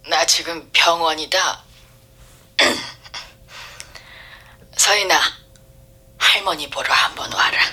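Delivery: soft, husky, hoarse, strained voice that catches. A narrator reads a grandmother speaking to her grandchild on the phone, hoarse and choked. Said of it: "할머니 목소리가 잠겨 있었다".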